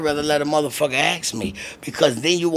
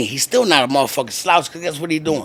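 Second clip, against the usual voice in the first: ordinary talk, nothing marked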